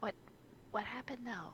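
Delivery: very quiet, careful, hushed voice. Asking about a shivering, trembling man, as quiet as possible. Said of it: "trying to be like as quiet as she can".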